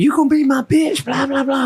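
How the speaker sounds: very high-pitched, menacing, scary yelling. Retelling how a guy in city jail tried to scare him: imitating someone yelling. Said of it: "yelling at me".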